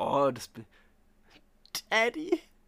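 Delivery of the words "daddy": voice breaks very high and loud on "Daddy". Answering a joke about being someone's father: voice crack. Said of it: "ich hab miesen Voice Crack".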